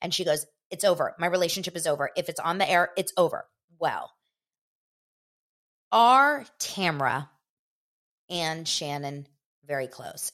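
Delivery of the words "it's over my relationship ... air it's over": ordinary talk, nothing marked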